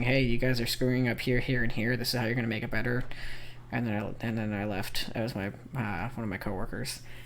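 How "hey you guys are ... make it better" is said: usual speaking voice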